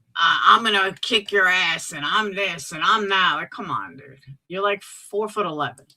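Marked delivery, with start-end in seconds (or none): 0.5-3.4 mocking put-on tough ranting voice. Mocking how Moon rants about fighting: imitating Moon's rant. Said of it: "I hear Moon go on her rants".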